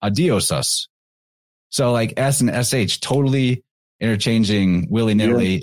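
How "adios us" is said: the S sound on the "us" ending. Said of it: "the same guy saying it later".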